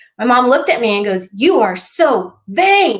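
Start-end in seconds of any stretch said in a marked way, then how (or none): 1.3-3.0 mock, very drawn-out, very slow angry voice. Retelling what mom said in anger: imitating an angry mom. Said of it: "She was so angry with me".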